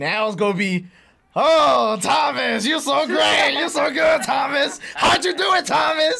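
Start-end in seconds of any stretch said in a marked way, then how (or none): 1.4-6.2 very high, fawning, gushing voice. Retelling how the others fussed over Thomas: imitating others gushing over Thomas. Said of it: "they was all like".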